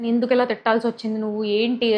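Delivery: normal talking voice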